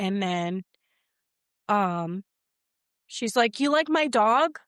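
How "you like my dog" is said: put-on loud, high-pitched, flirtatious broken English accent. Retelling a woman flirting with a man, in a broken English accent. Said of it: "she has broken English accent".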